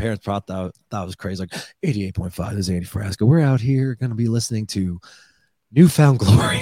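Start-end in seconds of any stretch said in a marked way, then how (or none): 1.4-6.6 put-on radio announcer voice. Recalling pretending to host radio teasers alone in their room, radio DJ voice. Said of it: "I wanted to be a radio voice".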